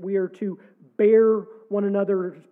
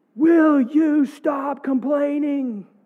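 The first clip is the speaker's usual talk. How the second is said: loud, exaggerated, raised, overplayed, dramatized delivery; 7 semitones higher, 5 dB louder than usual. Speaker dramatizes what his wife says to him: exaggerated raised voice, quoting wife. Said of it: "she didn't really raise her voice like that".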